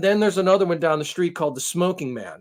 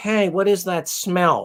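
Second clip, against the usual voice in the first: put-on older woman voice, slower. Telling how a vocal older woman comes over to complain, imitating Carol's voice. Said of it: "And she does sound like this".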